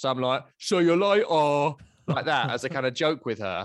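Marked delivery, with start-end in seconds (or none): 0.6-1.7 raised put-on Essex accent, letters dropped. Father showing how he jokingly says goodbye to his daughter, in an Essex accent. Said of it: "saying it like I'm from Essex".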